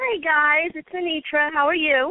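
chipper, bright voice. Joining the hosts on the phone line, a guest greets them, chipper and happy. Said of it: "You sound very chipper and happy today".

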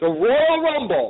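high, slow, drawn-out wrestling ring announcer call.

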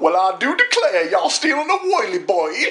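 put-on cartoonish Southern accent. Retelling a movie character's line to friends, cartoon southern accent. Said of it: "It's like cartoon Southern".

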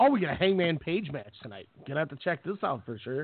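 ordinary talk, nothing marked

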